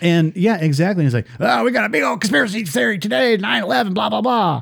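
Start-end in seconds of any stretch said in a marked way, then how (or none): 1.4-4.6 rough, raspy, wired, jittery rant, pitched high. Describing how a conspiracy theorist started out: imitating Alex Jones. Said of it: "And that's how he talks too".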